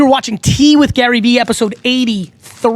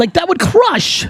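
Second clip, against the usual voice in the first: ordinary delivery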